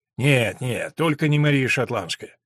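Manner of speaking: ordinary delivery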